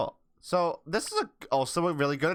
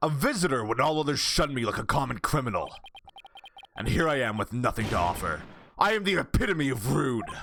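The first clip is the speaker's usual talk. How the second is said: deep character voice set way down low. Voicing Damien Tenma greeting a visitor: deep voice as Damien Tenma. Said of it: "He seems like he just have a really deep voice".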